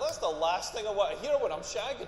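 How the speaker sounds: plain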